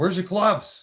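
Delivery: very high, shrill, loud scolding yell. Retelling how Mom asked about gloves: imitating Mom yelling. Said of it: "Mom would yell at me and she'd be like".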